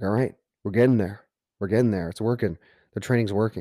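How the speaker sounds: ordinary talk, nothing marked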